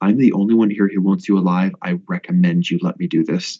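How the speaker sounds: whispering. Whispering to a captive while gagging him, in character: whisper. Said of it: "I'm gonna whisper to him".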